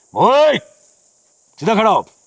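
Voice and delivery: stern, loud, high-pitched barked yell.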